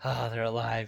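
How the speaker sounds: acted-out grudging, reluctant, let-down, disappointed tone. Describing how he says the line, acting out mock disappointed obligation. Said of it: "He just like says it with this just like disappointed obligation".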